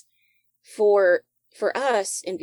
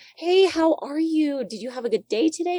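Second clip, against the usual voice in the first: very high, chirpy customer-service voice; 10 semitones higher than usual. Speaker imitating how customer service talks in America, American customer service voice. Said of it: "there's a customer service voice here in America".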